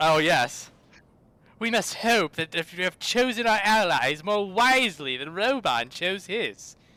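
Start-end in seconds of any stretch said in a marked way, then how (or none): 1.6-6.7 put-on snooty young noble voice, higher pitch. Reading a line from a screenshot aloud: snooty Alphinaud voice. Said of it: "his, like, snooty Aram Reborn voice".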